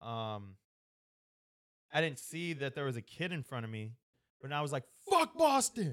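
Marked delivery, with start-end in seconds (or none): 5.1-5.9 shrill, all-out holler, very loud and high-pitched. Recounting what they yelled right after the anthem, the speaker is retelling a loud shout. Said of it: "Like loud as hell".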